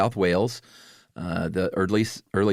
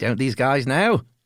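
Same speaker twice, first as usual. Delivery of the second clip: put-on New Zealand accent, pitched higher; 5 semitones higher than usual. Voicing what Australian listeners might think of the two speakers, New Zealand accent. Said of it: "you do the best New Zealand accent".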